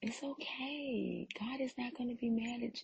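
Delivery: soothing, soft, high-pitched, coaxing devil voice.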